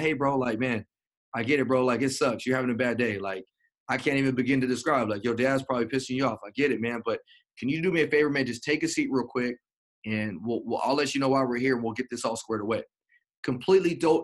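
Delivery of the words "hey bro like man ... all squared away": ordinary talk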